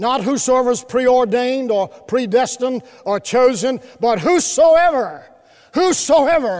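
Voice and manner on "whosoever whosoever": whosoever stressed heavily, leaned on hard. Quoting a verse and stressing one word: stress on WHOSOEVER. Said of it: "Could I emphasize that word".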